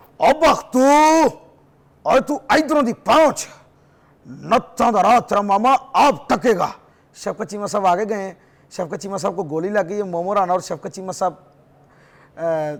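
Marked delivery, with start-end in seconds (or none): 0.2-6.7 put-on Punjabi villain voice, higher. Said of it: "शफकत चीमा साहब की कुछ हो जाए।".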